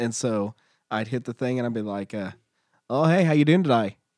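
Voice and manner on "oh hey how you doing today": fake Australian accent, higher and louder. Retelling greeting drive-thru customers as a bank teller: put-on australian accent. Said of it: "Where'd the Australian guy go?".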